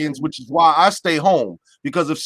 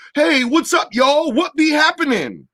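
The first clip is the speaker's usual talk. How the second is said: over-the-top exaggerated caricature voice, very high; 10 semitones higher than usual. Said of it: "I'm gonna do my impression of".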